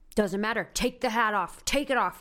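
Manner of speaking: mock screaming, yelling loudly, making a big scene. Retelling being ordered to take a hat off, imitating someone screaming. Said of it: "he's like screaming at me".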